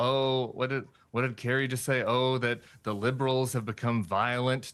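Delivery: ordinary delivery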